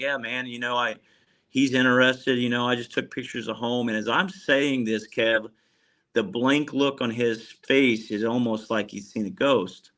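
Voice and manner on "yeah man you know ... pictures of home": usual speaking voice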